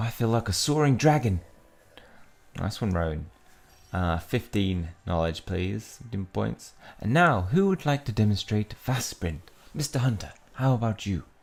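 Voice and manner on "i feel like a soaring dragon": put-on bad Australian accent. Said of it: "that was so bad, Australian accent".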